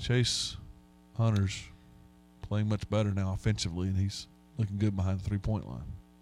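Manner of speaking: flat, uninflected commentary, zero inflection. Mocking a basketball broadcast commentator: flat Jim Boeheim impression. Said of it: "There's no inflection in Jim Boeheim. ... he's just not enthused".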